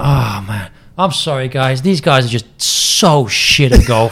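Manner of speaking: slow, crestfallen, dead-serious, let-down remorseful tone. Retelling what a disappointed golfer said after slicing balls: imitating a disappointed golfer. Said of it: "he's so disappointed".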